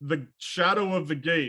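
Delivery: ordinary delivery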